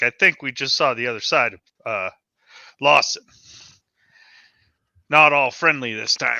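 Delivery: soft, muttered aside under the breath. Speaking in character to Pete as someone walks away: quietly under the breath. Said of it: "I'll say quietly under my breath to Pete".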